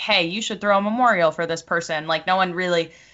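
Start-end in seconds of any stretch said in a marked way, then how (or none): none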